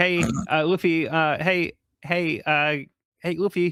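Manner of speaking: very drawn-out, slow, stumbling, desperate pleading. Retelling a comic scene, voicing Chopper: desperately calling for attention. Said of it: "desperately trying to get their attention".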